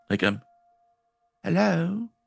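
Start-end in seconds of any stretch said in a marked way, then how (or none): 1.4-2.1 really meek, very high, timid voice. Voicing a character who calls out into the darkness: really meek voice. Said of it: "she just gives out this really meek".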